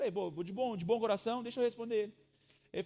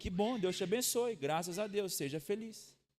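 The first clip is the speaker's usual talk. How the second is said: dry, acted sarcasm, thick with irony. Retelling own reply to an online commenter: retelling an ironic reply. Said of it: "Aí eu fui irônico já".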